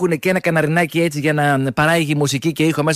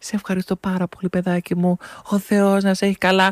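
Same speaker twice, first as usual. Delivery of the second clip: put-on quavering, tremulous voice; 3 semitones higher than usual. Retelling what shoppers with two carts say when let ahead: imitating a trembling voice. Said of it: "με ύφος τρεμάμενο και σου λέει".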